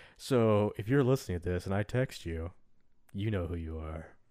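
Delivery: very low, hushed, creepy murmur. Speaking to a listener they text, in a creepy voice. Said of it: "you said it in kind of a creepy voice".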